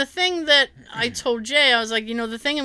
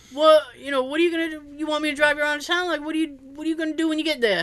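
different, higher-pitched voice with a questioning tone; 5 semitones higher than usual. Retelling what the driver asked about the trip: imitating Kevin. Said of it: "You mimicking Kevin?".

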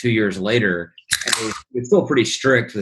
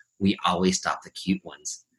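soft, hushed, leaned-in quiet aside; 2 semitones lower, 7 dB quieter than usual. Retelling what the security lady said, leaning down: imitating a quiet remark. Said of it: "leans down real quiet".

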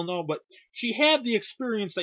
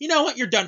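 curt, fast, fed-up and irritated snap; 3 semitones higher than usual. Retelling how Amy sent an employee home for the night, retelling an irritated snap. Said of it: "Amy gets a hair up her ass and goes".

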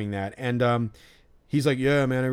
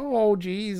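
put-on grandma-like old-lady voice, higher; 8 semitones higher than usual. Recalling a woman in her late forties who talked like a grandma, imitating her. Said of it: "she talked like a grandma".

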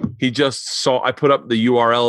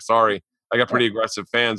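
plain

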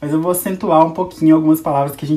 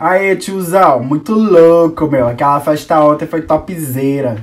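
raised-voice Paulista accent; 6 dB louder than usual. Demonstrating the third Brazilian accent in a series of imitations: Paulista accent. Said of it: "agora é Paulista, terceiro sotaque".

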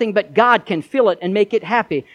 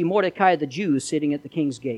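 plain reading voice

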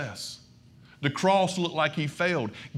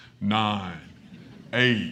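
very low, weighty, very deep voice; 8 semitones lower than usual. Telling the story of Jesus rising again, counting down in a God voice. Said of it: "y'all this is my God voice".

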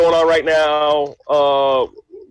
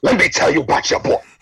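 put-on sports pundit voice. Announcing a story about the other speaker's friend: Stephen A impersonation. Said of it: "this is me doing my Stephen A impersonation".

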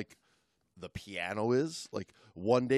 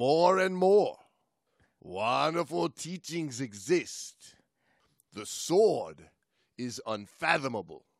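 put-on Japanese accent, sounding authentic. Playing a sumo wrestler character, in a put-on Japanese accent. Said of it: "That is a great Japanese accent".

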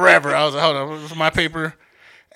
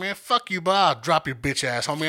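put-on tough angry voice, fake fury, quieter; 5 dB quieter than usual. Retelling a shouting match outside with a teacher: imitating own put-on tough anger. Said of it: "I'm acting".

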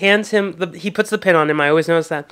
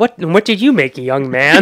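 put-on old rich man voice, louder; 4 dB louder than usual. Quoting a cartoon scene the two are discussing: Mister Burns voice. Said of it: "I love how Mister Burns goes".

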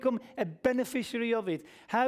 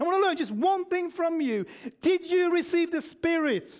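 angry, insistent, pitched-up voice; 6 semitones higher, 3 dB louder than usual. Repeating Paul's words to the Galatians for your listeners, acting out Paul's angry tone. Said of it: "this is the angry tone".

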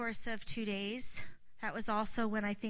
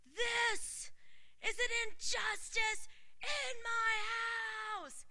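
very loud, slow booming voice, my stretched out; 13 semitones higher than usual. Retelling what God said about the rejection, imitating God's very loud voice. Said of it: "God in a very loud voice said".

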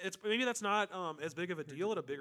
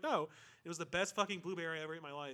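ordinary talk, nothing marked

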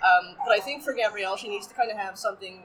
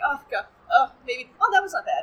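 put-on valley girl voice, high, sing-song, musing; 5 semitones higher, 4 dB louder than usual. Imitating a side character perusing temple items: imitating a valley girl voice. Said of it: "a blonde valley girl".

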